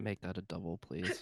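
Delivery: quiet whisper. Voicing a character who asks quietly for a double: whispering. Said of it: "Galen whispers to Lily".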